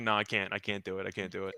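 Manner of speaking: mock crying, sobbing, choked-up, broken-up pleading. Acting out a meme about Lonzo's Bulls career: mock crying as Vince McMahon. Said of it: "he just starts crying".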